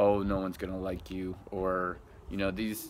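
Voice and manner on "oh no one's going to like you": plain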